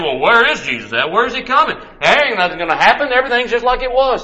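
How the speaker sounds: high, fast, scoffing and doubting tone.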